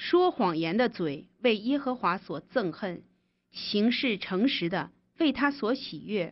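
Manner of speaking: normal talking voice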